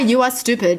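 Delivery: normal talking voice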